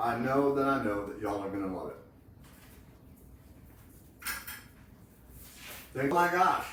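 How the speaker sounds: speaking with mouth full of food. Tasting chicken salad and urging the others to try it, talking with mouth full. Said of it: "it's hard to talk with food in your mouth".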